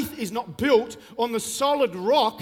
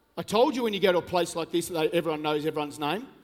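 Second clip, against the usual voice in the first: usual speaking voice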